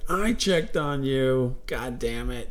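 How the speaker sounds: put-on very slow, drawn-out old woman voice.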